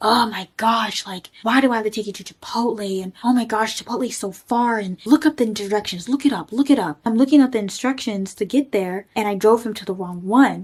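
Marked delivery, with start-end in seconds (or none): 0.0-7.0 put-on yelling. Retelling what a date said while yelling in the car: imitating someone yelling. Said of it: "He's yelling at me, and he's saying things like".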